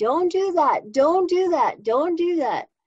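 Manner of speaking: put-on loud, high screaming, repeated. Retelling a voice that warned against doing something: imitating a loud screaming voice. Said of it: "loud and screaming".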